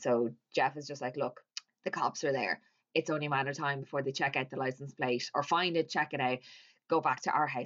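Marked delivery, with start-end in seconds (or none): none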